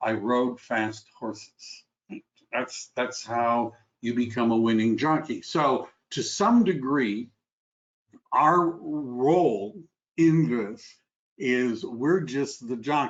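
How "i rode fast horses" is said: mock-deadpan, flat tone, lower. Retelling a winning jockey's answer to an interviewer, retelling a deadpan answer. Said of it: "his deadpan answer was".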